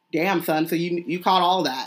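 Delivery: plain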